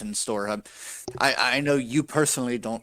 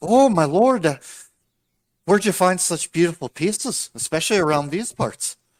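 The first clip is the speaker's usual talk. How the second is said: high, raised, upbeat happy-go-lucky halfling shopkeeper voice; 7 semitones higher, 7 dB louder than usual.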